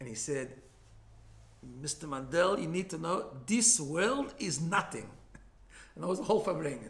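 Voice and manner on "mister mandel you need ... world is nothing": put-on Israeli accent. Quoting a man explaining things to another man all day, heavy Israeli accent. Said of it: "in his heavy Israeli accent".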